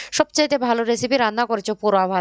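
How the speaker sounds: ordinary delivery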